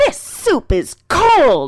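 snippy, put-out grumble. Retelling what a woman said when served her meal, imitating a snippy tone. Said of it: "she gets a pretty snippy voice going and goes".

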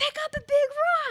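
shrill, very high, loud screaming. Retelling what Kenzie, holding a huge boulder, was screaming at the speaker. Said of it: "she's screaming at me".

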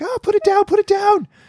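put-on panicked, freaked-out voice, very high. Retelling how she and Shailen reacted to the cat's trophy, retelling freaking out. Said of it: "both freaked out".

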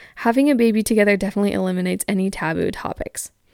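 ordinary talk

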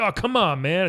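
mock-angry voice. Speaker acts out how he'll react when his hair gets tussled, mock-angry complaint. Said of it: "he gets very mad".

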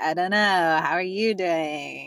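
put-on every word stretched out in Valley Girl accent.

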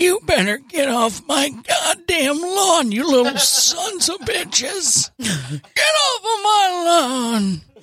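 put-on old grandpa character voice. Asked to do more of a voice, the speaker does a grandpa voice. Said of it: "She always tells me to do the get off my lawn".

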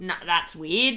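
prudish Australian voice. Reacting to another speaker's comment about a kid: conservative australian voice. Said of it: "conservative Australian there".

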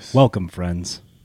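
mock announcer voice, deep. Talking about the Masters, he greets the listeners: Jim Nantz impression. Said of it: "That was awesome".

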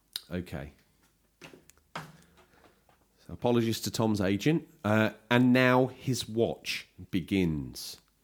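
formal, proper adult broadcaster voice. Reading a prepared statement aloud on someone else's behalf, having stepped out of a joking character; formal broadcaster voice. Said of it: "assume my proper grown-up broadcasting voice".

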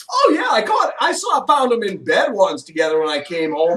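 put-on breezy, loud, flippant and offhand delivery. Retelling what Angie Bowie said on a talk show: flippant Angie Bowie imitation. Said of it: "Angie says just flippantly".

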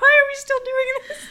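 laughter bursting through, very high, very loud, rushed. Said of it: "I can't breathe".

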